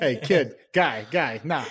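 put-on Boston accent. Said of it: "the accent coming".

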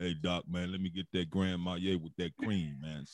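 cool, easygoing, laid-back manner. Retelling a night out, imitating A G ordering a drink: imitating A G's cool talk. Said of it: "he talk like this. He all cool".

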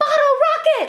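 mock sudden, very high, shrill screamed outburst. Retelling a man on surveillance footage who stops to shout: imitating someone yelling. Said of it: "he'll just stop and yell".

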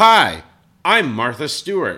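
put-on joke voice, booming, very slow, drawn-out, swooping. Showing the impressions nobody else finds funny: same put-on joke voice. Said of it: "it's the same voice that I do every time".

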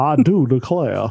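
classic southern courtroom drawl. Following another host's impression, doing a Foghorn Leghorn voice. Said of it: "classic Southern lawyer".

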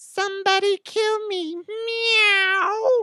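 very high talking-cat voice, drawn-out meow. Reading a joke news item, voicing the 32-year-old cat's reply: cat impression. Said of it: "that impression of a cat".

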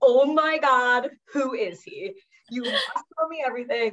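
giddy, gushing, beaming, high-pitched excitement. Retelling hearing a cab driver predict love, imitating her beaming excited self. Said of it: "So I'm beaming".

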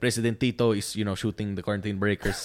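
put-on Filipino accent. Speaker recounts reading a news article aloud, in a Filipino accent. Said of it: "reading the news article in a Filipino accent".

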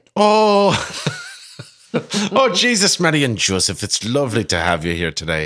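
put-on Irish accent. Opening a St. Paddy's Day quizathon question round: put-on Irish accent. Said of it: "Should I do it in an Irish accent?".

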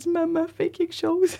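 acted crying, pleading tone. Recalling looking at their mother while crying, retelling a crying plea to mother. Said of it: "Je regardais ma mère en pleurant".

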